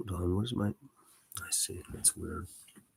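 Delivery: very quiet, soft, slow mumbling. Pausing a read-aloud to find the place, mumbling to oneself. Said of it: "I'm just mumbling to myself".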